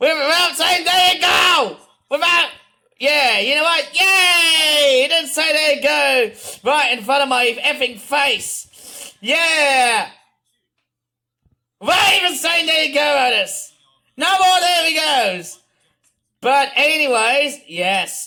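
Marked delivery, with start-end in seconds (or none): 0.0-15.6 loud piping shout with yay drawn out. Teasing otis, piping your voice really loudly. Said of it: "piping my voice really really loudly".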